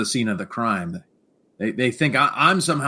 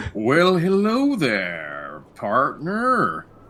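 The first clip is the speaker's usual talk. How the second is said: laid-on put-on working-class voice, swooping pitch; 3 semitones higher than usual. Told to put on another voice to stay in character, a player tries a blue-collar voice. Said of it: "Really amping up the blue collar".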